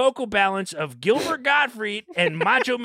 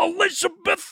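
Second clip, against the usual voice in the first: high-pitched, wrestler-style calling out; 9 semitones higher than usual. Quoting what Randy Savage said a lot: Randy Savage voice. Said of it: "and he would say".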